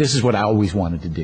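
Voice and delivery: ordinary delivery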